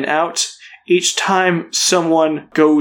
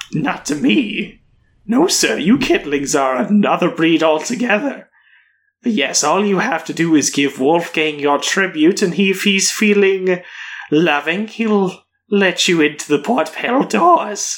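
cat-creature character voice. Voicing a hooded tabaxi who kneels down to a player: tabaxi cat-creature voice. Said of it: "He's like".

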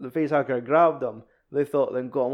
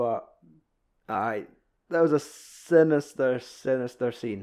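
normal talking voice

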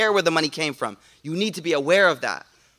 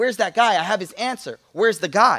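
put-on happy, glad voice; 3 semitones higher than usual. Retelling a story, quoting the Prophet calling for the questioner, retelling happily. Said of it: "you could tell in his voice that he was happy".

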